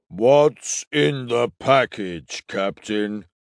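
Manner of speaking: deep bass character voice. Narrator reads Kref asking the captain a question, in Kref's deep basso voice. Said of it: "said Kref in his deep basso voice".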